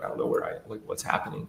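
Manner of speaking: put-on hushed, tearful, crying near-whisper. Retelling what she would say after coming back from her episodes, imitating someone crying. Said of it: "she'd start crying and she's like".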